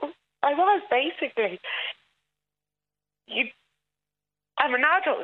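tearful voice, crying. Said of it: "I'm crying now".

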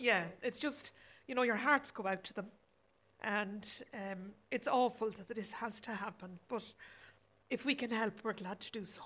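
tearful voice. Responding to an emotional story about people needing shelter, on the verge of tears. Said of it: "sorry, I'm going to cry now".

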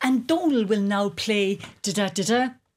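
ordinary delivery

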